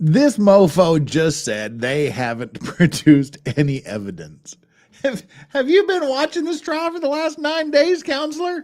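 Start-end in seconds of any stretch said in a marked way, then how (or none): 5.0-8.6 very high-pitched voice with a rattling quality. Reacting to a counselor's claim at a trial, slipping into a Muppet voice. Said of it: "I just went into Muppet voice there".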